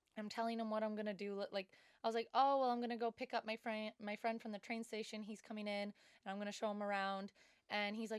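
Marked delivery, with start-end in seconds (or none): none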